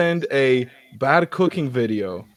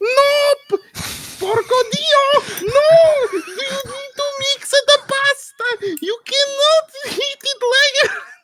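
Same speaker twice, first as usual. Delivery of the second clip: squeaky, very high, drawn-out rant, "no" stretched out; 4 dB louder than usual. Mocking someone for not mixing the pasta sauce, sounding like Mort from Madagascar. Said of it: "I basically sounded like Mort from fucking Madagascar".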